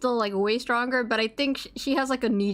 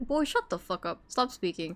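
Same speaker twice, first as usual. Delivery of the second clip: irritated, annoyed, fed-up, dismissive tone; 2 semitones lower, 4 dB quieter than usual. Imagining scolding an annoying student, pretend annoyed. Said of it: "I would get so annoyed".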